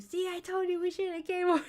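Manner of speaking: mock very high-pitched yelling. Retelling a dream to the other speaker: retelling own yell. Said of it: "I'm just, like, yelling at you".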